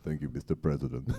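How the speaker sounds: stately, formal diplomat-style delivery. Answering praise of his Henry Kissinger: Henry Kissinger impression. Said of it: "he does a wonderful Henry Kissinger".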